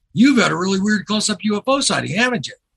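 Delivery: mock eager, excited voice. Retelling rushing up to a guy and asking him: imitating own excited question.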